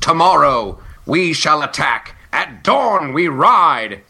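slow, noble, heroic rallying tone. Retelling a comedy sketch, quoting a heroic video game king rallying troops. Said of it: "the heroic king in a video game and rallying the troops".

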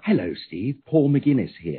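put-on plain English-accented voice. Recalling being met at the airport by Paul McGuinness: Paul McGuinness's English voice. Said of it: "English voice".

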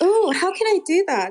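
loud, huffing and puffing, out-of-breath voice. Speaker just ran into their room away from loud kids; out of breath. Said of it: "I'm out of breath because I literally ran into my room".

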